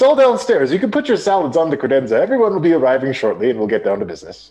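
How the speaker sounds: very friendly, high, sing-song tone. Voicing a doorkeeper who welcomes everyone in: very friendly greeting. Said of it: "He greets you very friendly".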